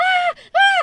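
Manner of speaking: very high-pitched screamed ahs. Retelling how a friend reacted from the other room: imitating someone screaming. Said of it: "He was screaming".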